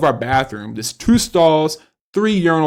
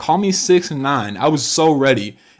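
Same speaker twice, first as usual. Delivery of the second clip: ordinary talk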